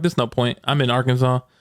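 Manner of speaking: ordinary talk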